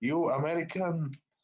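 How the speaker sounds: high-pitched call in broken English. Voicing a character yelling to another across rubble: yelling in broken english. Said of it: "He tries to yell".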